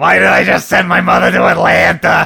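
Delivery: loud, gravelly, raspy, creaky rough voice. Describing Harvey Fierstein reprising his role, imitating his David voice. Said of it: "Talking in his David voice".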